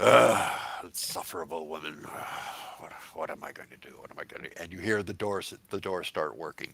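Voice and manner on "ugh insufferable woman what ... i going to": low, grumpy grumbling, muttered. Voicing the mayor Ellis coming up the stairs; Ellis grumbling to himself. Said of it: "grumbling to himself".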